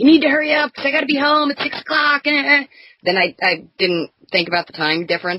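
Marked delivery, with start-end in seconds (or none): 0.0-2.2 put-on yelling, higher. Retelling hurrying a husband home over a time mix-up: imitating her own yelling. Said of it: "yelling at my husband".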